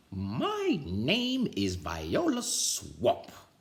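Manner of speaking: scratchy woman's voice. Reading a story aloud, voicing the lady at the door: scratchy Viola Swamp voice. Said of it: "said the lady in a scratchy voice".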